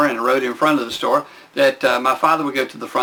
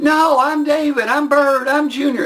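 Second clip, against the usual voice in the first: acted very high, slow, drawn-out yelling; 13 semitones higher than usual. Retelling being pinned down and insisting on own identity: imitating own past yelling. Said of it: "I'm yelling".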